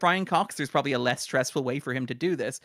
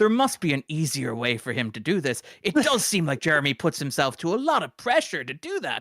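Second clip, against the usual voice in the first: mock cutting, scornful, withering, disdainful tone. Retelling how Brian Cox sees Strong as an actor: imitating a withering remark. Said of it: "has this really withering impression of Strong".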